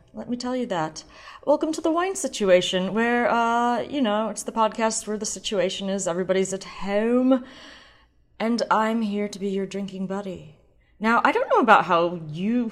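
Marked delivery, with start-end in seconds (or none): 11.2-12.7 voice cracking into a squeak mid-phrase. Welcoming the listeners to the podcast, voice squeaking. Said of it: "my voice just squeaked there".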